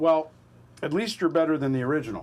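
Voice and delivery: ordinary talk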